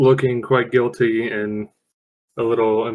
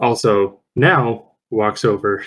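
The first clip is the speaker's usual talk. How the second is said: usual speaking voice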